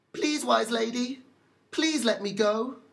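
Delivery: tiny, high-pitched, small little mouse voice. The mouse speaks up to the old lady from down at her feet, tiny voice. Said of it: "She looked down and saw the tiny mouse sitting at her feet. / But the mouse merely repeated himself, / she heard a tiny voice at her feet".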